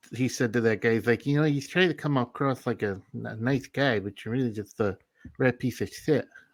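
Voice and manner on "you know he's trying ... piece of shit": boxer voice with a lisp on every s. Retelling what Mike Tyson said to a guy: Mike Tyson impression. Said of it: "that was my Mike Tyson impression".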